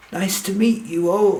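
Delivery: stuttering. Narrator reads a character greeting the group, stuttering. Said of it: "Edwin stutters".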